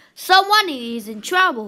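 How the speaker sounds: ordinary delivery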